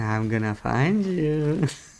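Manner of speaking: slow, childlike put-on little kid voice. Imitating what the other player does in the forest: little kid voice. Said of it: "when you do the little kid voice".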